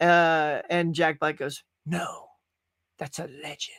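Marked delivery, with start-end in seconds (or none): 1.8-3.8 much softer, hushed delivery. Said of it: "he says it just like that".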